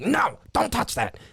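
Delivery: high, harsh snippy voice. Retelling a cashier telling a child off: imitating a mean cashier. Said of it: "a mean cashier woman's like".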